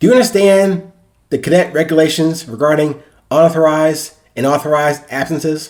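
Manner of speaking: ordinary delivery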